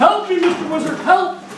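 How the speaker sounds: high, pleading, put-on yell. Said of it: "So he'd start yelling".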